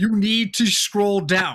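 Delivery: mild, half-hearted, drawn-out shouted voice. Streamer retells their mod screaming at them in chat, imitating someone screaming. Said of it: "My mod is screaming at me in chat".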